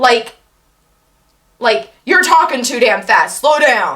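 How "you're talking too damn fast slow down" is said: put-on belittling, dismissive, rude, insulting tone. Showing how people complain about fast talking: imitating an insulting tone. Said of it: "treat it like it's an insult".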